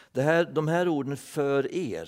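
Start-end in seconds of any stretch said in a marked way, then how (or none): none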